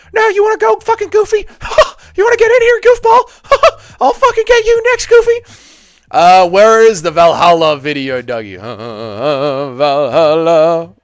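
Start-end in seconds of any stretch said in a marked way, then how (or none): 0.1-5.4 very high, squeaky, put-on cartoon mouse voice. Asked to do Mickey Mouse calling out Goofy, the speaker does a Mickey Mouse impression. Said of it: "Can you do an impression of Mickey Mouse".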